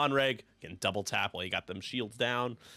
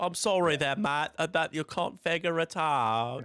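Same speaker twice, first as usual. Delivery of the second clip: intentionally bad, loud, overdone English accent; 8 semitones higher, 5 dB louder than usual. Showing the other speaker an overdone English accent. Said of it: "My English accent is egregiously overdone".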